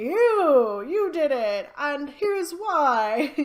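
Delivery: loud, high, slow dramatic detective delivery.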